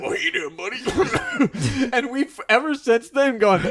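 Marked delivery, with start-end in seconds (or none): 0.0-1.9 words coughed and hacked up as if through dust. Retelling a sketch line, imitating Jake coughing out grave dust. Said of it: "Jake coughs out, like, a mouthful of grave dust".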